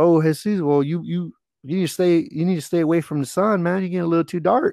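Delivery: put-on big Southern accent. Quoting a man who had asked his name, in a big Southern accent. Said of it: "he had a big Southern accent".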